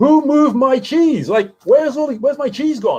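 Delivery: play-acted high-pitched yell at the top of the lungs. Retelling a parable where a character finds his cheese gone: acting out a shout at full voice. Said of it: "he just shouts at the top of his voice".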